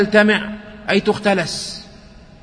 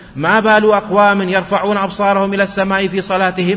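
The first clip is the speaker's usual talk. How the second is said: ordinary talk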